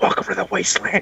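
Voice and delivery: put-on whisper. Retelling how a man slid up to another guy and whispered to him, retelling a whisper. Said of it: "he just whis- whispers".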